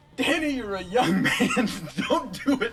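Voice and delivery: very loud, high, sudden scream. Retelling how a brother screamed out in the barn: imitating someone screaming. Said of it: "John just screams out".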